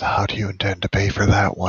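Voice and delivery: hushed whisper. Role-playing character speaking aside to Elizabeth, whispering. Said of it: "Gonna whisper to Elizabeth".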